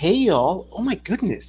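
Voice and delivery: put-on girl voice. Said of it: "Indians don't go like".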